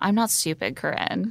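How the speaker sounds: very calm, cool, composed, direct. Recapping Christina looking Corinne in the eye, retelling her very calm reply. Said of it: "very calmly says".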